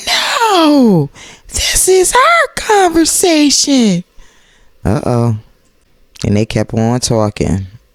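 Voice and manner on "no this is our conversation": very high, swooping, slow sing-song with long drawn "no". Speaker retells an argument, quoting Tisha's reply, Tisha's high voice. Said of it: "Then Tisha did the high voice".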